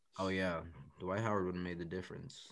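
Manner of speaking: low, soft, dead straight, mocking sarcastic deadpan.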